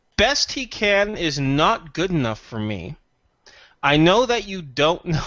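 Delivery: smug, self-satisfied, pleased-with-itself delivery. Replying in character that the best he can is not enough: smug. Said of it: "That sounded so smug".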